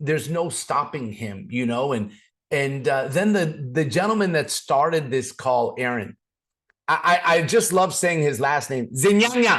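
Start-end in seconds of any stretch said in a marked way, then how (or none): 8.9-9.6 "Zinyanya" said loud, hard, forceful and aggressive. Saying the caller Aaron's last name: aggressively stressed name Zinyanya. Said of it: "Like I have to say it that aggressively".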